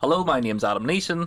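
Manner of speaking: very formal, stiff, buttoned-up, proper delivery. Introducing himself at the start of an episode: very formal tone. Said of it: "Adam Neeson sounding very formal".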